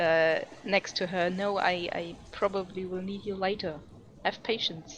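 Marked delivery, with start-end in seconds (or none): 1.3-5.0 hushed character whisper, quieter. Playing a character who whispers to a spirit beside her: whispering in character. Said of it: "she whispers to the spirit".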